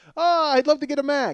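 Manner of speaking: bad, half-hearted Irish brogue, very high. Acting out a buyer's words in an attempted Irish accent: bad Irish accent. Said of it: "that's an Irish guy who's teaching in Zimbabwe".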